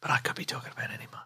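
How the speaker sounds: hushed mutter under the breath, nearly whispered. Retelling someone's aside about an announcement this month: imitating someone muttering under his breath. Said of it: "under his breath he went".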